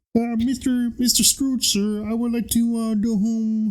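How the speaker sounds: very high, squeaky puppet frog voice. Acting out a line from a Christmas movie: Kermit the Frog voice. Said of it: "bust out your Kermit impression".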